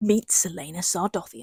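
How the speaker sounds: back-cover book blurb narration voice. Starting a book talk, reading the blurb aloud: book blurb voice. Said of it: "Let me get my blurb voice on".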